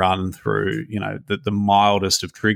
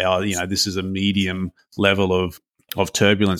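ordinary talk

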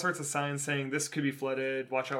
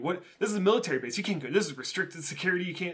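put-on berating scold, higher; 5 semitones higher than usual. Retelling how the booth lady started scolding: imitating a berating guard. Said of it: "starts berating me".

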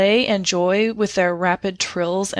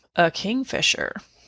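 flat, deadpan, expressionless delivery; 3 dB quieter than usual. Retelling the sister's answer about a bird they spotted, retelling a deadpan reply. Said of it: "in her deadpan tone".

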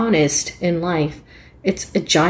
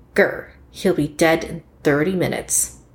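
mock menacing, growled. Retelling an angry caller's words on the phone, imitating a menacing caller. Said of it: "rather menacingly".

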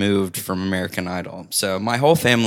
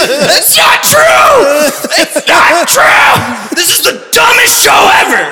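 put-on scream, higher and louder; 13 dB louder than usual. Retelling how a little brother reacted to a TV result: imitating a scream. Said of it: "ran upstairs screaming. He was like".

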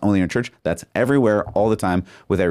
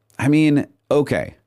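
ordinary talk, nothing marked

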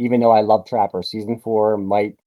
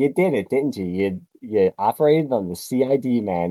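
play-acted sly, snide, needling tone. Retelling a favorite scene from MASH, retelling a snide line. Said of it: "so snidely when he's like".

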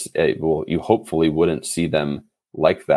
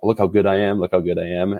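normal talking voice

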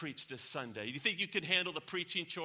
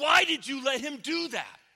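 very high-pitched, loud crying out; 9 semitones higher, 7 dB louder than usual. Telling a story, voicing an angel calling to God: retelling a cry out. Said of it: "the angel cries out to God".

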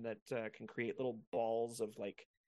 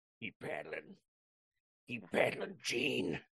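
hoarse, slower put-on character voice. On a show not afraid of accents, speak to Gene in your best hoarse Logan impression. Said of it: "that's the best Logan I could do".

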